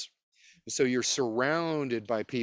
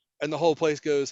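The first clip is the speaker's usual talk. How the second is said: ordinary talk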